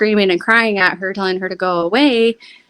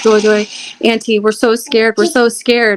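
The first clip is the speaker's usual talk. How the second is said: ordinary talk, nothing marked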